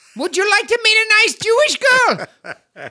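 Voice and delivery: put-on yelling. Retelling how someone yells out a question: imitating someone yelling. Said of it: "someone yells out".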